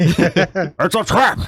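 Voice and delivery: high, loud, called-out voice. Trying out voices with the others: Admiral Ackbar voice. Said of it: "Is that Animal Akbar?".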